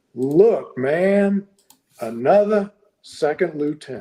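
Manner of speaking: put-on, exaggerated American Southern accent. Retelling what a man sitting against a building said to him, in a Southern accent. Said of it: "in his best Southern accent".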